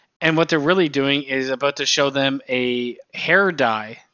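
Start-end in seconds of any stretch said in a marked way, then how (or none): none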